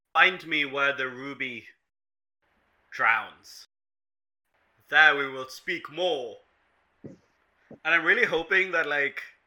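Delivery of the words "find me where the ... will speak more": cryptic, enigmatic, mysterious mystic voice. Playing an occult teacher, the speaker addresses an approaching man in a mysterious voice. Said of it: "I will say merely in some mysterious voice".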